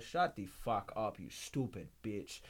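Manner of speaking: put-on Nigerian accent in a dad voice. Retelling confusing another player in a game, in a Nigerian dad accent. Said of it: "I'd be just fucking Nigerian".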